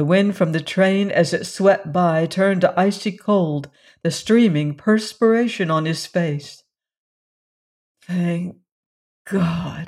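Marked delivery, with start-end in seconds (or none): 8.0-9.9 breathed out on a breath. After dragging Valency clear of the train, he speaks, breathed. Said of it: "he breathed".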